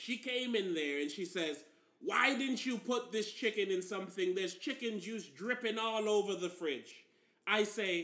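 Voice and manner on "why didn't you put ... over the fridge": normal talking voice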